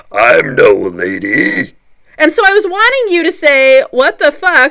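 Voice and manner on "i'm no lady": very deep, low monster voice, stretched out. Retelling a reply to a man who won't curse in front of ladies, monster voice. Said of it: "And in my monster voice".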